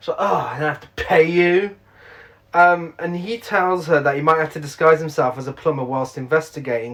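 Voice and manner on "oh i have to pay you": mock, slow, drawn-out, disgusted distaste. Retelling a plot, the speaker acts out a woman who has to pay an investigator, mock-disgusted. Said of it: "she's disgusted that she has to pay him".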